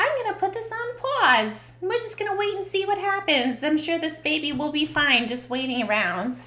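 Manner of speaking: put-on New York accent. Speaker acts out a hypothetical person's reaction, in a New York accent. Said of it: "I don't know why I'm doing my New, my uh New York accent there".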